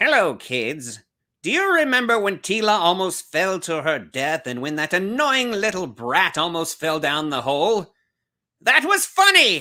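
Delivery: high, villainous, cartoon-style voice. Imagining how the villain would deliver the message to kids: Skeletor voice. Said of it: "if Skeletor was delivering that message".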